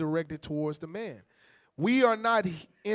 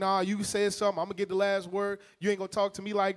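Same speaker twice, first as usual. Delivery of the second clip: ordinary delivery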